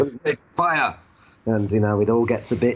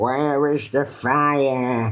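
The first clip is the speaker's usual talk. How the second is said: put-on miserable old woman voice, drawn out; 3 semitones higher than usual. Recapping an episode that opens in a caveman society, old woman voice. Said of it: "there's like an old woman who's going".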